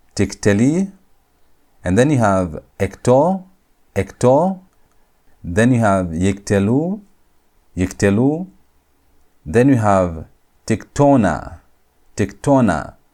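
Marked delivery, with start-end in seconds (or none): 12.2-12.9 accent on the tona syllable. Speaker reading a word list to chat, stress on tona. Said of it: "Notice I'm putting the emphasis on tona".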